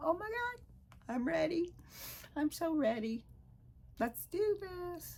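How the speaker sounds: voice shooting very high with excitement. Speaker, dreaming of having their own place, voice going high with excitement. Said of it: "my voice got a little high there".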